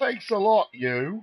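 put-on very high, loud, drawn-out full Cockney accent. Voicing a character, slipping into a full cockney accent. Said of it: "now I've gone full Cockney again".

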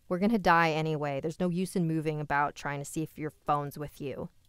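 ordinary delivery, nothing marked

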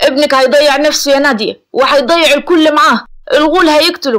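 heated, furious outburst. A man warns a woman that her son is in danger, speaking angrily. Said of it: "رأفت بعصبية".

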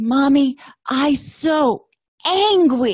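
put-on high, very slow toddler speech. A parent retells what a three-year-old said in the hallway, imitating Sean's toddler voice. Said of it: "in his little toddler voice".

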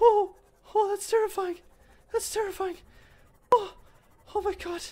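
very high, squeaky, terrified cry. Reacting to something terrifying on the screen: voice going squeaky. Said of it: "My voice just goes into a fucking squeaker".

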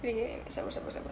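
whispered, soft spoken.

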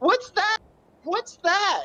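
very high, hen-like clucking squawk. Retelling a funny story, imagining how a woman sounded: imitating a chicken-like voice. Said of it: "that same tone of voice in the woman being like".

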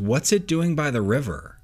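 plain

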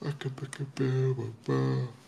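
mid-yawn. Chatting about an imagined story, yawning. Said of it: "I'm yawning a lot".

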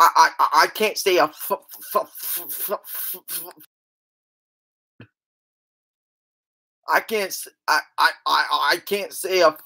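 mock stuttering. Mimicking people trying to tell a joke: imitating a stutter. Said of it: "when they always freaking stutter".

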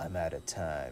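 rough, raspy, world-weary, jaded delivery. Reading a script aloud, a character says this to himself: raspy, jaded voice. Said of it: "in a raspy, jaded voice".

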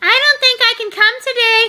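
high-pitched, very phony, fake-friendly voice. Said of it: "she gave me a very phony hello".

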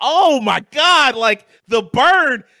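high, loud, slow, stunned, awestruck gasp. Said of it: "And I was like".

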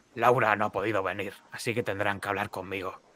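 very hoarse, low, quiet, hushed voice. Game master voicing Frankie greeting the players, in a very hoarse voice. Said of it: "Y de repente os saluda y os dice con una voz muy ronca".

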